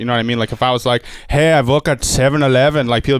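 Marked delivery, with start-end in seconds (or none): 1.3-2.9 put-on Indian accent. Discussing comedy accents and stereotypes, giving an example in a stereotyped Indian accent. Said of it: "like the Indian accent is".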